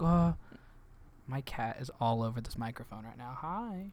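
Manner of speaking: cute, sweet little voice. Imitating a cartoon character while a cat rubs the microphone: Marcy's cute voice. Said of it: "Marcy has such a cute voice. She's like".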